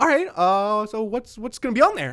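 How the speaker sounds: way-too-happy put-on tone. Retelling a sandwich maker asking about the order: imitating a very happy worker. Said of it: "he was very happy".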